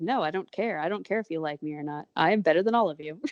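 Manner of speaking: put-on arrogant hare voice. Acting out how the captain who doesn't care about anybody talks: arrogant Red Jack Teal voice. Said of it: "but a little more outwardly arrogant".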